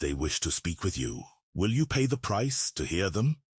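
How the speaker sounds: dry, crackling high rasp like dry leaves. Narrator voicing the goblin speaking to the player, in a dry crackling rasp. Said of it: "he rasps, his voice like the crackling of dry leaves".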